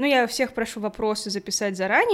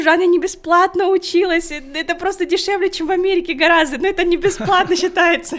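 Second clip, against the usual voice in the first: yelling, corrective shouted tone; 8 semitones higher, 8 dB louder than usual. Retelling how she corrected an acquaintance she hadn't seen in years; retelling her own yell. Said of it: "ору".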